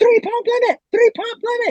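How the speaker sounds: very high-pitched, repeated shouted yell. Retelling warning another kid during a bb gun fight: retelling own yell. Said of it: "And I was yelling".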